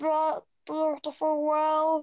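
goofy, silly comic voice. Showing listeners how to say the phrase: funny voice. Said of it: "but do it in a funny voice".

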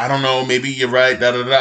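ordinary talk, nothing marked

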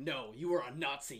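dead-serious, angry tone. Describing the end of a film where the character turns serious, imitating an angry tone. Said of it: "in this angry tone of like".

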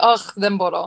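put-on Greek exclamation while laughing. Describing how people in Greece exclaim when laughing, imitating Greek laughing exclamation. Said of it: "in Greece you'll hear like themboro".

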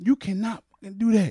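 put-on angry voice. Retelling a mom telling off a young man: imitating someone cursing out. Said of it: "cursing him out".

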